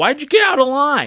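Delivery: very high, shrill, loud, angry yell. Retelling a customer yelling at an older lady at self-checkout: imitating someone yelling. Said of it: "yelling at this lady".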